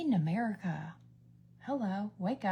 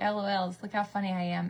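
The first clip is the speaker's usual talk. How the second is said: ordinary talk, nothing marked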